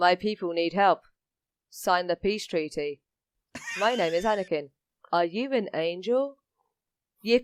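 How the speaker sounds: put-on flat delivery. Mocking the film's line readings, doing a mock flat, emotionless delivery. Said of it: "It was the same emotions".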